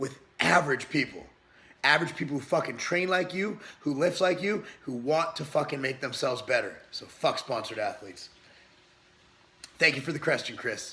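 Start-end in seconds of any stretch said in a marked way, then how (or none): 0.0-8.3 hyped-up, fired-up, angry-sounding rant, voice half gone. Answering a viewer's question, getting hyped up. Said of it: "I'm just getting hyped up".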